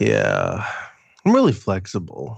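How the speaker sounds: very slow, deliberate, drawn-out words. Showing how to quote the line slower, as Joe Rogan. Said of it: "you gotta talk even slower".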